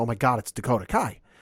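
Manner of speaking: loud yell. Retelling seeing a wrestler's entrance on the Titantron: imitating own past yelling. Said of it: "and I start yelling".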